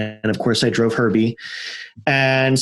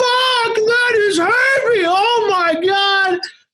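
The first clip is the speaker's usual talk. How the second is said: high, loud, excited screaming. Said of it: "all these guys screaming".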